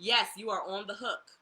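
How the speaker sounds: plain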